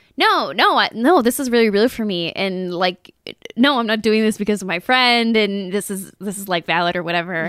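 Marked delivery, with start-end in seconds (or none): none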